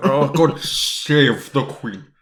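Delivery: slow, stretched-out delivery, save pronounced as shave. Showing how Bond fights the S in the toast: James Bond accent. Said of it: "trying to make an S sound".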